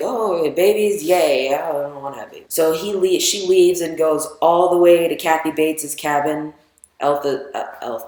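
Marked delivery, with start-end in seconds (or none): none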